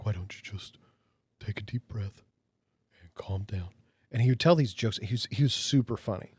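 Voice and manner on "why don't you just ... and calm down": very soft, breathy, low, halting, broken-up phrasing. Imitating a counselor the speaker knew, breathy Patrick impression. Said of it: "It's real breathy".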